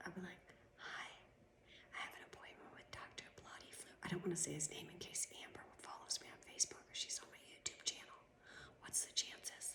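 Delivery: hushed whisper under the breath, barely audible. Acting out a planned visit to the office: acting out a whisper. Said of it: "I think I'll whisper when I go".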